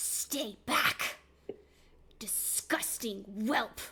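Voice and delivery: every word growled. Playing a character who shoves him to the ground, growling. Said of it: "she growls out".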